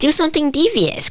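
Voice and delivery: grating, annoying, very high-pitched voice. Telling a story, the speaker quotes a friend on their last day on the island, annoying high-pitched voice. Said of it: "he has a really annoying high pitched voice".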